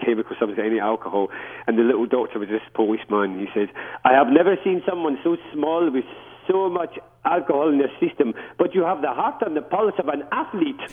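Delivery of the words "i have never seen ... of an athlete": very bad fake Polish accent, pitched up. Retelling what a doctor once told the speaker, in a bad Polish accent. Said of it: "Worst Polish accent you've probably ever heard".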